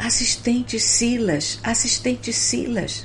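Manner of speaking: high, urgent, anxious calling out. Narrator reads a hurrying woman stopping the assistant, anxious exclamation. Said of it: "exclamando, ansiosa".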